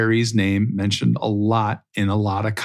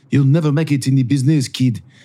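line spoken in a put-on French accent; 3 semitones higher, 3 dB louder than usual. Retelling what someone told a fifteen-year-old in the hotel business: put-on French accent. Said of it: "they probably said it with a French accent".

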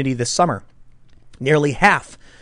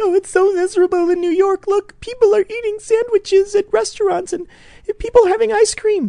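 very high falsetto fake sobbing and crying. Describing a video of a man in a wealthy new york area: imitating someone fake crying. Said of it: "he's filming himself fake crying".

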